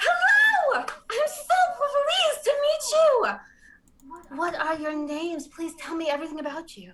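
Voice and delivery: gushing, very loud, high-energy, swooping bubbly tone. Greeting new companions in character, arms thrown up: high-energy excited greeting. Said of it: "jarred by the energy that you are giving off".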